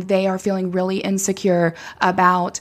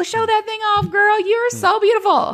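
high, upbeat encouraging tone; 3 dB louder than usual. Retelling own words to a client in the studio: imitating own studio voice with a client. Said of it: "that's my voice in the studio".

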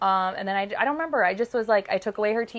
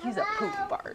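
high, soft, hushed grumble under the breath; 12 semitones higher, 6 dB quieter than usual. Retelling how a tired child muttered about another child: imitating muttering under breath. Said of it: "under his breath".

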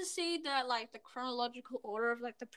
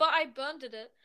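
ordinary talk, nothing marked

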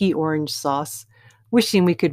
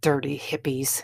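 contemptuous, disgusted, hushed hissing voice; 6 dB quieter than usual. A father looks at people lolling on the grass, hissing in disgust. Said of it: "he hissed".

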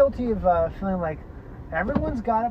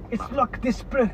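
South African accent, much higher pitch; 5 semitones higher than usual. Showing off the accent cracked at an airport, in a South African accent. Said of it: "cracked the South African accent".

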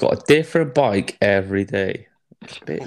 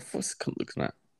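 muttered under the breath, much quieter. Retelling what a man muttered while looking at Clive, mumbled under his breath. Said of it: "mumbled under his breath".

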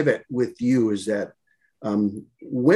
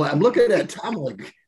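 ordinary delivery

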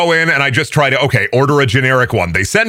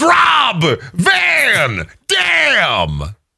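play-acted shrill yell, very high; 10 semitones higher than usual. Describing a wrestler's signature move: imitating Rob Van Dam yelling. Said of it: "he points his thumbs at himself and he yells".

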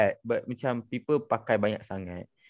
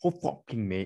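put-on British accent, quieter; 4 dB quieter than usual. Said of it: "they try to have that accent".

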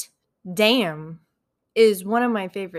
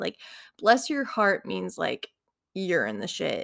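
normal talking voice

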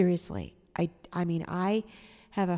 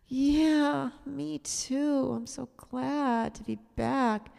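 very slow, weak, hopeless, pathetic and depressed; 8 semitones higher than usual. Retelling a woman's reply on being back at work, imitating a pathetic, depressed voice. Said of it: "in this very pathetic, very hopeless, very depressed kind of voice".

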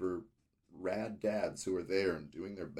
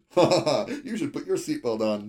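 loud, rushed nervous laugh running through words; 8 semitones higher, 13 dB louder than usual. Recounting a scene, acting out a man speaking to a freaked-out woman: imitating nervous laughing. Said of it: "nervously laughing".

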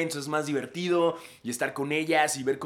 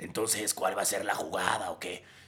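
very low, hushed little devil voice; 7 semitones lower, 5 dB quieter than usual. Retelling what the elves said to them about the plan, in a little devil voice. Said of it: "con voz del diablito nos decía como".

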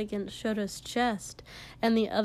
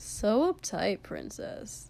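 drawling voice. Narrating a story, a man answers a woman in a drawl. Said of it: "he drawled".

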